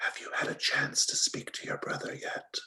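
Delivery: hushed, very quiet whisper. Voicing a character who leans in to a player: whispering in character. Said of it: "leans in and whispers in your ear".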